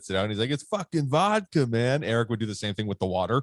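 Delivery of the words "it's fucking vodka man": very slow, drawn-out drawl, every word stretched. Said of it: "[name] and [name] when the guy drinks the water".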